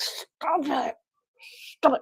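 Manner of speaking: slow whisper through clenched, gritted teeth. Showing how the line is said: through gritted teeth. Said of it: "you gotta grit your teeth like".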